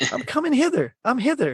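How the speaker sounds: very high-pitched, botched, strained voice. Quoting a movie line in a self-admitted bad impression: Michael J. Fox impression. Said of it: "I'm gonna try to do my best, Michael J. Fox".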